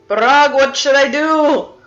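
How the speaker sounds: very loud, high-pitched shout. A player's character calls to Barag through a stone, yelling. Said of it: "yell to like the stone".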